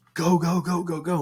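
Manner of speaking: high-pitched mock yell of go go go.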